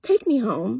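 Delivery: very calm, composed, utterly unruffled even voice. Retelling asking to be taken home when asked if mad: reenacting the calmest voice. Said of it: "in the calmest voice, just like this".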